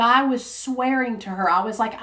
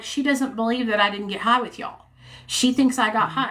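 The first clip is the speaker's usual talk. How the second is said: ordinary talk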